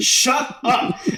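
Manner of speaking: put-on screaming. Imagining everyone yelling at a puppet: imitating people screaming. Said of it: "everyone just screaming at a puppet".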